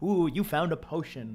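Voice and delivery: mysterious, mystical put-on voice. Recalling what they said on a livestream, in a mystical put-on voice. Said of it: "I was trying to make it like be all like mystical".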